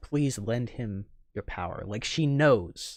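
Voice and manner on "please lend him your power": ordinary delivery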